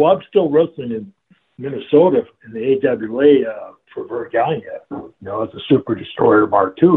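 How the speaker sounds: ordinary talk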